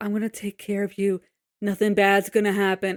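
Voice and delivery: whispering voice. Retelling what someone said in a hospital room: imitating Vianney whispering. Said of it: "whispering in the ho-, in the hospital room".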